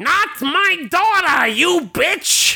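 very high-pitched attempted comedian-style voice. Running through a list of voice impressions, doing a Gilbert Gottfried impression. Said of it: "That was supposed to be Gilbert Godfrey".

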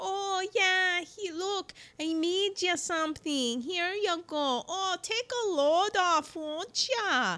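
slow, high, folksy put-on Midwestern accent. Warning not to be fooled by the accent, doing a midwestern accent. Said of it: "you get into that Midwestern".

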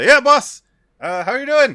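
very high, very loud dwarf voice. Voicing a dwarf lake tender who greets his boss: Federico the dwarf voice. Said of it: "a dwarf named, who's presumably named Federico the Lake Tender, comes out and says".

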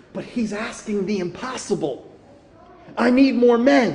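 imitated whispering. Retelling a movie scene, a commander speaking to Darth Vader: retelling a whisper. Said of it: "he kinda whispers to Darth Vader".

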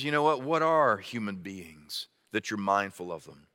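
put-on sarcastic, skeptical, disbelieving, swooping rant. Quoting Job's rant in his anguish: put-on sarcastic, skeptical tone. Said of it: "in almost a kind of sarcastic, skeptical kind of tone".

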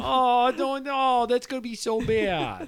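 very high-pitched Midwestern accent. On a comedy podcast, asked about a Midwestern way to say bad; Midwestern mom voice. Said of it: "It is kind of like a Midwestern mom".

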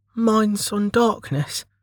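very high-pitched mutter. A narrator reads a girl's reply to a guy, muttering. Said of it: "she muttered".

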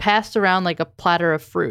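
ordinary delivery

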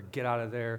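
ordinary talk, nothing marked

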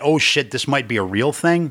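ordinary talk

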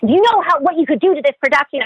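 put-on yelling. Retelling how a crew guy scolded a child: imitating a crew guy yelling. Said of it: "I just remember him yelling at me like crazy".

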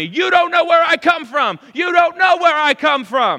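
high, very loud screaming. Speaker acts out a man who screams at them, retelling a scream. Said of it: "he just starts screaming at me".

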